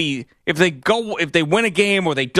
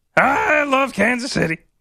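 very high-pitched, puppet-like voice; 9 semitones higher than usual. Imitating a man who does press conferences after games, in a Muppet-like voice. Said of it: "The man sounds Muppet-like".

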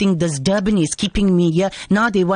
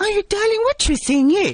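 high-pitched, sweet auntie-like voice. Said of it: "You sound so nice".

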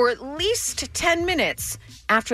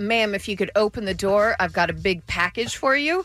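usual speaking voice

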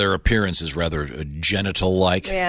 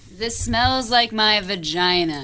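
put-on old prostitute voice, pitched much higher. Asked to read a product's label aloud, she reads it in an old prostitute voice. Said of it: "She just did the old prostitute voice".

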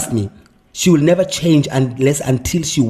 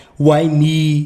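ordinary delivery

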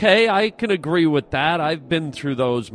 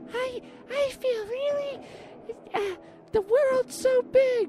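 much higher, quieter mouse voice; 6 dB quieter than usual. Told to talk like a mouse, the speaker tries a mouse voice. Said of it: "Not a very good mouse".

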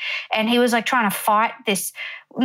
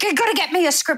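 put-on frantic voice, higher; 6 semitones higher than usual. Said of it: "the extra going full crazy".

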